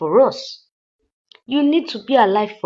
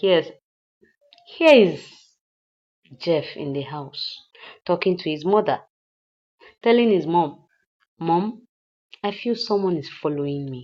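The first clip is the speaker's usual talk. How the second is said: ordinary delivery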